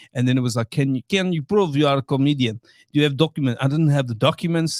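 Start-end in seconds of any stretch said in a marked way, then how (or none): 0.7-3.6 put-on Eastern European accent. Retelling a border officer's questions at JFK: imitating an Eastern European accent. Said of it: "this guy sounds Eastern European".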